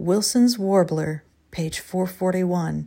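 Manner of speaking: quiet, hushed, reverent tone. A character naming a bird perched on a nearby fence post, hushed, reverent. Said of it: "Bertrand said in a hushed, reverent tone".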